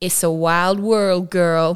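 strange put-on Texan Californian accent, loud. Retelling a guitar-strumming man looking her in the eye, weird Texan Californian accent. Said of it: "says in a weird Texan Californian accent".

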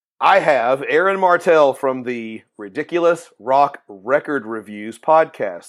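nice and slow, carefully enunciated.

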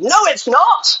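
acted-out, very high yelling. Retelling yelling back at the mc announcing the first runner: retelling a yell. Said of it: "And I'm yelling".

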